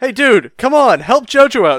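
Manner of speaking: loud shouting. Retelling a scene where Speedwagon shouts at Stroheim: imitating Speedwagon shouting. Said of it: "shouting at Stroheim".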